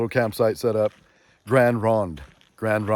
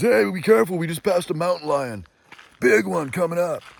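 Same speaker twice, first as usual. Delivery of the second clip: put-on high, drunk, wasted dude voice; 7 semitones higher than usual. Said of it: "these guys are wasted drunk".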